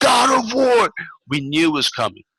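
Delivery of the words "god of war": excited yelling, higher pitch. Retelling jumping off a seat at a game reveal: retelling own excited shout. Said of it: "I jumped off my seat and I was like".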